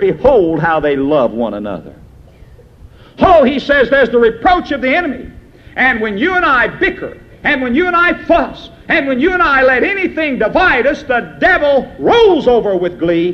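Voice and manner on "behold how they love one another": put-on sneering tone, much lower. Retelling what the watching heathen say of the church, imitating a sneer. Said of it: "they say with a sneer".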